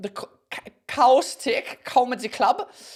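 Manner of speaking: fake German accent, slow, high and drawn out. Speaker announcing their upcoming date at a comedy club, in a put-on German accent. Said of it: "I don't know why I'm doing a German accent".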